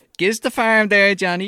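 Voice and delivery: very high, loud, odd Irish twang. Speaker mocks the accents in a film: weird Irish twang. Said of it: "In like a weird Irish twang".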